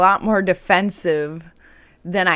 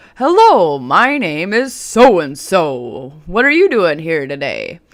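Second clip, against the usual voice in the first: loud, big, booming voice; 4 dB louder than usual. Retelling how a psychiatrist came into the room and greeted the patient, in a big booming voice. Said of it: "he says in a big, booming voice".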